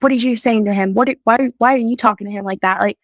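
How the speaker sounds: play-acted anger, stumbling and tripping over words. Retelling an argument with Josh at night: imitating own angry past words. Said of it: "getting mad at him".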